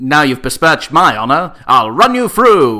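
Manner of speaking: transatlantic accent. Describing a favourite kind of film, quoting a typical line: transatlantic accent. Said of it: "speaking in a transatlantic accent".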